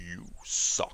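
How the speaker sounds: breathy, taunting whisper, breathed out. Trying a Shao Kahn impression, best that can be done. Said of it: "The best I can do is".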